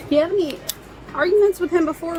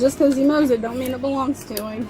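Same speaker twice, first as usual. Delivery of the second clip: ordinary talk, nothing marked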